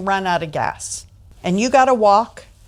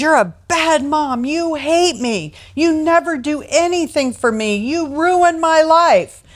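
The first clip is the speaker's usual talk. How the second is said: put-on acted, high-pitched, enraged little boy tantrum voice; 6 semitones higher than usual. Retelling a common story of a little boy shouting at his mom: imitating a child's enraged outburst. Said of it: "erupts into a rage, and says".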